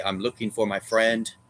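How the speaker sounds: plain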